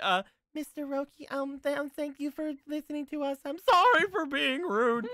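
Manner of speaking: loud, squeaky, very high-pitched voice. Redoing an apology to a listener for being rude, in a squeaky voice.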